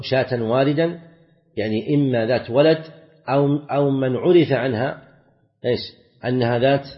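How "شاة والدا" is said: normal talking voice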